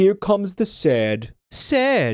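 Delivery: high, drawn-out announcer-style cat voice. Retelling what the cat on the team says in battle: imitating the game cat's voice acting. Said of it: "that cat will say".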